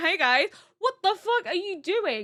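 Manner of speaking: casual, offhand, relaxed tossed-off delivery. Retelling a character walking into a scene: imitating Eren walking in. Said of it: "be like".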